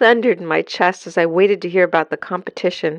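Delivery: ordinary delivery, nothing marked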